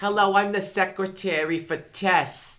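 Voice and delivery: put-on New Jersey accent. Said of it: "a few times where she had that accent".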